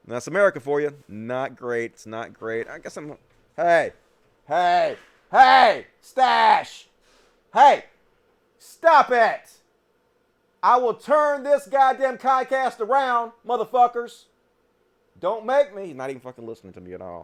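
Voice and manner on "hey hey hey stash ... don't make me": very high, loud, drawn-out screaming. Yelling at a cat named stash to stop: screaming at the cats. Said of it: "had to scream out".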